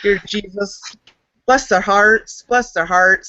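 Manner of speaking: sarcastic, insincere tone dripping with sarcasm. Retelling a teenage prayer for a group: imitating own sarcastic prayer. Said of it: "it was in sarcasm that I prayed for them".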